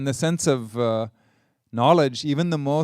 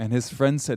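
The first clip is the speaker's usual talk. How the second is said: ordinary delivery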